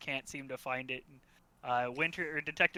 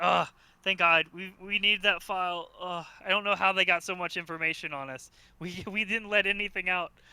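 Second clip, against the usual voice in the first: loud, relieved yet anxious, worried tone; 4 semitones higher, 8 dB louder than usual. A client answers the call about the briefcase: relieved, worried client. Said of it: "He's like, / We paid you we paid you freaking tons of money to break into this place and get the briefcase. / He's very angry. / you look at the phone and it just says unknown for the answer or for th".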